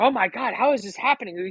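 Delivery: panicky, freaked-out, can't-believe-it disbelief. Retelling a coworker's reaction to the news: imitating a freaked-out coworker. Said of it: "He's so freaked the fuck out".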